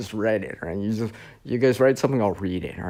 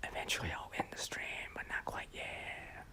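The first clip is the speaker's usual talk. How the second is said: whispering, much quieter and slower. Streamer talking to chat, whispering. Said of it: "Why is he whispering?".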